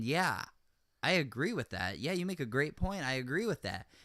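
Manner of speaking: ordinary delivery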